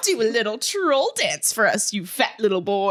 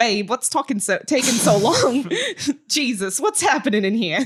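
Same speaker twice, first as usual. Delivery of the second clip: put-on Australian accent from the throat. Redoing the scene's entrance line after being asked for the accent: Australian accent. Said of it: "With, with the accent now".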